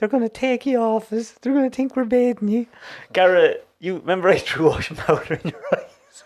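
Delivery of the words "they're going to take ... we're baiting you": pitched-up, tearful weeping through the words. Retelling the mother in the front of the car: imitating Mammy crying. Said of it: "Mammy in the front of the car crying".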